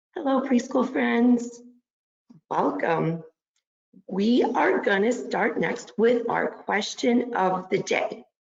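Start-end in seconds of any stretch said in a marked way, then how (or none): 0.2-1.7 sweet, kindly, gentle voice, pitched up. Greeting the preschool friends after a round of hellos, saying hello nicely. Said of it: "Let's say hello as nice as we can".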